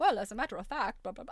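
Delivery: put-on British-accented machine voice. Retelling overhearing a computer while on the phone, in a British computer voice. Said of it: "that British voice saying".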